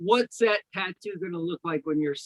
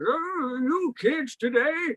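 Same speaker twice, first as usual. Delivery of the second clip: put-on old man voice, high, very slow, drawn out; 8 semitones higher than usual. Showing the old-person voice used since age twenty: old man voice. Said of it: "you heard the voice I was doing earlier".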